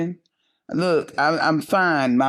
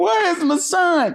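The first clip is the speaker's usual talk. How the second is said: put-on scream, higher; 13 semitones higher than usual. A mother recounting the night her son sneaked out, retelling her own scream. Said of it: "I'm screaming".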